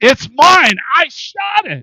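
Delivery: very high, shrill, very loud screeching scream. Retelling a comic where a lady with a gun yells at a cowboy; imitating a woman screaming. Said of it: "she's screaming at this cowboy".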